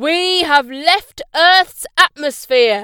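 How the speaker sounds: very loud, full-voiced shouting yell. A minibus driver calls back to his passenger, yelling. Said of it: "yelled the driver".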